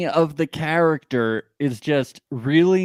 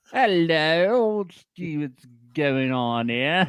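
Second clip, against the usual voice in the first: slow, put-on London accent; 3 semitones higher than usual. Greeting another speaker in a joking way: put-on london accent. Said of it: "You sound like you're from London".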